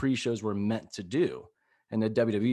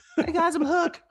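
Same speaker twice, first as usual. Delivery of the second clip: very loud, as high-pitched as the voice goes; 5 dB louder than usual. Acting out the moment Hook finally first speaks, in a very high-pitched Hook voice. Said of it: "he just has the highest pitched voice like ever".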